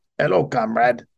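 bad, weak put-on Russian accent. Reading an article aloud, then breaking into a possibly bad Russian accent. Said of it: "that might not be a good Russian, accent".

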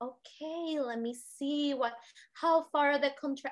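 put-on very calm voice. Retelling the midwife's phone call, imitating a very calm voice. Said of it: "she's like the calmest person".

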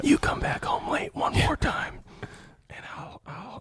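acted mean whispering. Acting out a mean dad scolding his son: mean dad whispering. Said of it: "he doesn't yell, he whispers".

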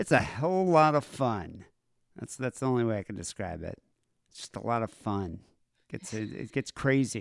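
said with sarcasm. Host describing the show's second segment to listeners, sarcastic. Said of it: "That with such like sarcasm?".

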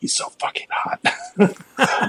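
very slow, drawn-out whisper under the breath. Retelling what she whispered to herself: imitating a whisper. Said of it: "I kinda hear her whisper to herself".

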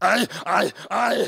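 bad, squeaky, very high creaky croak. Doing a bad impersonation from Total Recall: Arnold Schwarzenegger impression. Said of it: "here's my Arnold Schwarzenegger from Total Recall".

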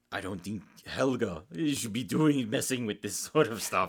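clumsy, stock, really bad German accent. Describing a story's doctor character, quoting him in a really bad German accent. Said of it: "like a German accent, you know, like really bad".

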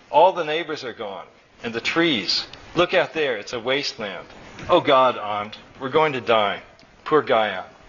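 ordinary delivery

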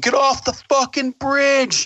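very high-pitched, slow, drawn-out screaming. Retelling how a guard ordered him off a bridge: imitating someone screaming. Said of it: "screaming at me".

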